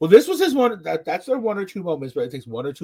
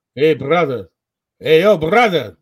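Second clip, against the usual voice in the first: heavy, loud, thick put-on Russian accent; 6 dB louder than usual. Retelling a stranger who approached him at the grocery store: thick Russian accent. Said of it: "with this like thick Russian accent".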